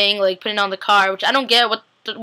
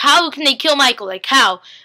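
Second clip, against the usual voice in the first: mock frantic, stunned, panicked outburst; 4 semitones higher, 3 dB louder than usual. Retelling a viewer's reaction to the episode: imitating someone freaking out. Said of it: "freaking out".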